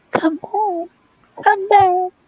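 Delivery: very high, small, thin, tiny voice. Retelling a movie scene where a woman calls the boats back, tiny little voice. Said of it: "tiny little voice going".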